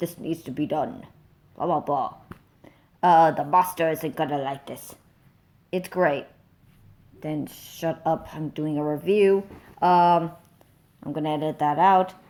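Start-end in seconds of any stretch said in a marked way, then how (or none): 0.0-4.9 deep, proper-sounding voice. Imitating an actor's line in a film review: proper deep Cogsworth voice. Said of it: "He has that deep voice still, but it's so proper".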